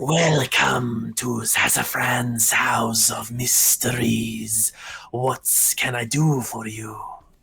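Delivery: slow, snake-like shopkeeper character voice. Voicing a robed cobra Yuan-ti shopkeeper greeting visitors: cobra Yuan-ti merchant voice. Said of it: "a large, uh, Cobra Yuan-ti".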